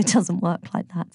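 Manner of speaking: ordinary delivery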